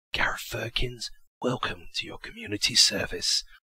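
hushed, soft whisper. Narrator reading Warren's line welcoming Gareth Firkins, whispered. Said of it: "Warren whispered".

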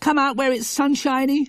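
very high, pleading, begging voice. Refusing to stay in the room, she begs the others to come out: begging. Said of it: "she begged".

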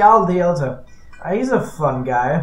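slow, heavy, laid-on-thick sarcastic tone. Streamer playing through a game, naming the next stop, with heavy sarcasm. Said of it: "I say that with as much sarcasm as I can possibly get to".

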